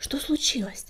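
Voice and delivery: hushed, breathy, barely voiced whisper. Reading a story aloud, a frightened cat asks the one emerging from the cave, whispered. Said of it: "прошептал Огнегриф".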